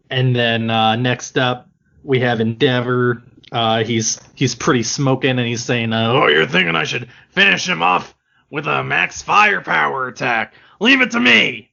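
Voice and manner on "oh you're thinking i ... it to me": rough, creaky character voice. Reading a manga line voicing Endeavor, sounding like Grunkle Stan. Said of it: "you sound like Grunkle Stan from Gravity Falls".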